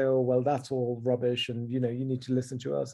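normal talking voice

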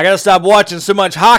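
very loud voice.

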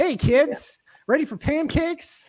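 very high, cheery grandpa voice. Describing themselves, the speaker imitates someone's grandpa who gets up early, early-rising grandpa voice. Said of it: "like someone's grandpa that gets up early".

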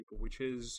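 ordinary delivery

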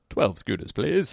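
put-on voice faking sober speech. Retelling placing an order with the boys, putting on a fake sober voice. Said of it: "I put on my best sober voice".

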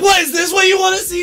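high-pitched shrieking scream. Retelling jumping out of a car in front of watchers, retelling his own screaming. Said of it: "I'm like".

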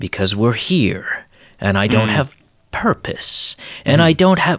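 stilted, unnatural, stiff program-like way of speaking. Describing how a movie villain talks: imitating Agent Smith's way of talking. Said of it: "this way of talking that nobody ever actually talks".

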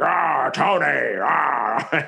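rough, creaky, raspy voice with ah drawn out. Mocking the villain's voice in the movie's final fight: imitating Jeff Bridges' Iron Monger voice. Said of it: "instead of like".

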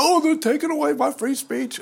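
high, mock whining, complaining tone. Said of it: "moaning and groaning and whining about".

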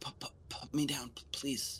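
stammering. Game narrator voicing a man being carried toward town, stammering. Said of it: "he's stammering, he's stuttering".

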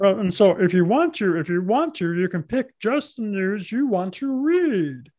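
high frog-puppet voice, words stretched out. Imitating Bill Gates introducing Windows 98, Kermit-the-Frog voice. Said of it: "here's my imitation of, of Bill Gates going".

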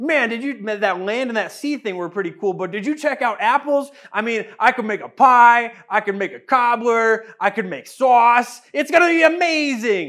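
badly acted, hyped-up, excited voice. Speaker retelling the creation story acts out God, terrible excited God impression. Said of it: "a terrible impersonation of God".

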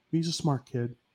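soft, low-key, flat monotone. Describing a hockey player's reply about a rival, imitating Jamie Benn's monotone, calm voice. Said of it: "just in the most monotone, calm voice".

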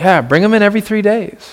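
thick, dripping, heavy mocking sarcasm. Quoting a line from the passage being discussed: imitating dripping sarcasm. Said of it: "dripping with sarcasm".

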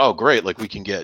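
normal talking voice

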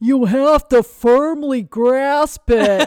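very loud, booming, very slow, drawn-out cartoon voice. Retelling a football replay: Patrick Star voice. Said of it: "you hear Patrick Star in his voice going".

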